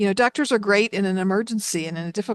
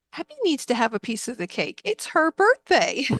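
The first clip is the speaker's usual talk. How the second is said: put-on cute, high voice of a small boy; 5 semitones higher than usual. Recalling a four-year-old boy talking about his new baby sister, imitating his cute little voice. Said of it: "his cute little voice".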